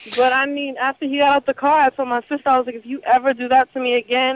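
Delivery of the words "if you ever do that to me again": usual speaking voice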